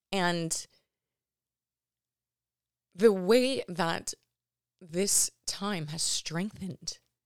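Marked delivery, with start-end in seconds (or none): 2.9-6.9 slow, choked-up, emotional voice. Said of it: "I'm gonna get emotional, sorry".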